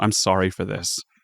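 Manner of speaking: soft, quiet, inward mutter. Voicing a character who speaks quietly, almost to himself. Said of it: "He just says quietly, almost to himself".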